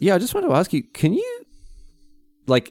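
venomous, swooping tone dripping with venom. Retelling how Adam asked to take shoes off: imitating a venomous tone. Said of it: "With as much venom as you just gave me".

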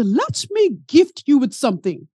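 clumsy, bad put-on Caribbean accent. Quoting a woman in the faculty lounge, in a bad Caribbean accent. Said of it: "I'm about to mess up her Caribbean accent".

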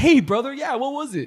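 New York accent. Showing how he can slip into different accents, New York-sounding accent. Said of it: "that sounded kind of like from New York".

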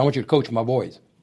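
usual speaking voice

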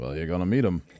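put-on British accent. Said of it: "my British accent turning into a [name] accent".

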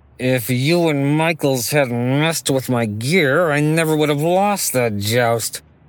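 words squeezed out through gritted, clenched teeth. A knight blames the listener and michaels for his lost joust, through gritted teeth. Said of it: "he says through his teeth".

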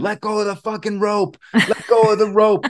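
desperate, high, frantic yelling scream. Retelling how everyone yelled at a father holding a bull: imitating screaming at someone. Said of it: "we're all screaming at him".

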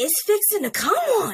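put-on very high, heavy, thick Louisiana Southern accent. Retelling what a 21-year-old repeated to him, in a thick louisiana southern accent. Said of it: "in the most Louisiana Southern".

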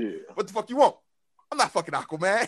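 tough street gangster delivery. Retelling what someone said about an oil spill, in a gangster voice. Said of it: "so it came out like real gangster".

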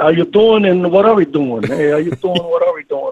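put-on thick New York accent, laid on heavy. Retelling how the men sent from up north spoke on arriving, acting them out in a heavy new york accent. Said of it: "with a very heavy New York accent".

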